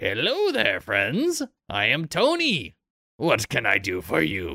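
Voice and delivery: swooping, sing-song goblin voice. A game master voices the goblin man greeting the party at the bar, in Tony the goblin's voice. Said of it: "you see a goblin man... he says".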